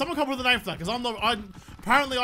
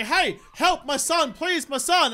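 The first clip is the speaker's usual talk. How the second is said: mock screaming, higher and slower; 10 semitones higher than usual. Speaker acts out a distressed parent pleading with a stranger for help, imitating someone screaming at the top of their lungs. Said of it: "you're just screaming at the top of your lungs".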